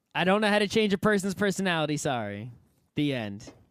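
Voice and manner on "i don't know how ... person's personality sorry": ordinary talk, nothing marked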